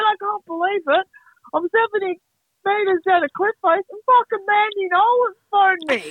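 mock high-pitched, buzzing, very pumped-up excited gush. Retelling a man's phone call from down a cliff face, imitating him pumped up. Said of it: "So pumped up".

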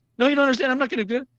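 very high, rapid, rushed anime-style defensive delivery. Retelling a princess character's reply to a talking sword, mock anime-defensive fast talk. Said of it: "she gets all like anime defensive, just talking really fast".

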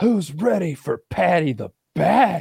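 terrible put-on British accent, very slow and drawn out. Retelling a fighter's post-fight interview line: imitating an awful British accent. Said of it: "her awful British accent".

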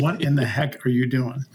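hushed whisper. Recounting someone leaning into the speaker's ear, retelling a whisper. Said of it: "he whispers".

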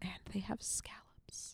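very quiet, hushed whisper, barely voiced. Recommending a cheap poke place to another speaker: whispering. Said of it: "Why did you have to whisper during scallops?".

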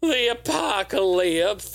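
lisp with a wobbly voice. Listing games by year, repeating the game's subtitle: lisp, voice goes wonky. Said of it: "I always get a lisp and my voice goes wonky".

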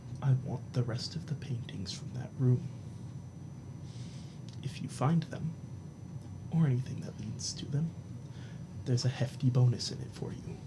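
whispered, barely voiced, hushed near-whisper. Voicing a man speaking real close to the listener, hushed almost-whisper. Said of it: "say in a hushed voice".

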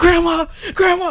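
very high-pitched, shrill yell. Recounting being chased, re-enacting calling out to their grandmother, retelling a yell. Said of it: "I'm yelling".

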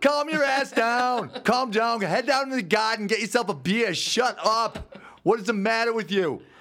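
put-on very high-pitched South Boston accent. Redoing a Doc Talk bit with the other speaker, in a Southie Boston accent. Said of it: "slipped into these Southy Boston accents".

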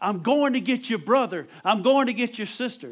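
very loud, high, preacher-like shout. Retelling a testimony of Jesus preaching in heaven, acting out shouting. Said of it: "Jesus was shouting".

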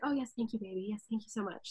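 smooth, velvety, kind, gracious, courteous voice. Retelling a brief talk with a queen after the show: imitating a velvety, kind voice. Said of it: "velvety, kind voice that was very much just like".

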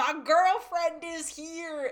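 mock high, loud, stretched-out scream. Retelling a drama scene as Han Gyul arrives at the cafe: imitating Han Gyul screaming. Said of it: "he just screams".

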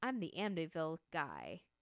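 normal talking voice

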